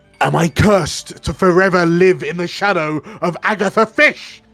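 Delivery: loud, high-pitched shout. A storyteller voices a woman who bangs her fist beside Zumbo in a tavern, shouting out. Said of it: "She shouts out".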